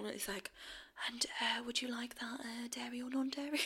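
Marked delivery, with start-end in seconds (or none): 1.1-3.6 high, hushed, barely audible whisper. Retelling a visit to a smoothie shop: imitating a whispering waiter. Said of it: "the guy was literally, like, whispering".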